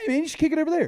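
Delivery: very high, loud hollering. Retelling watching soccer at home: imitating yelling at the TV. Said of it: "I'm kind of yelling at my T V like".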